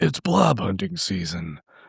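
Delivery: voice dropped as deep as possible, rough. Repeating the audiobook's last line again, deep Duke Nukem voice. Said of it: "That's as deep as I got".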